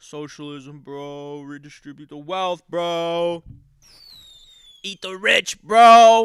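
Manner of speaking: boring, flat, slow, low bro monotone drone. Imitating how he always sounds, in a mocking low monotone voice. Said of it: "He always sounds low and monotone and boring".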